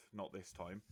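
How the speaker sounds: muttered under the breath. Stepping back into the room in character: said under the breath. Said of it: "under my breath".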